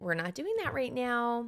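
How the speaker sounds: playful, humorous, condescending talking-down tone. Showing how the speaker says a stock phrase: humorous, condescending tone. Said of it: "I like a little bit of humor, like kind of condescending, like".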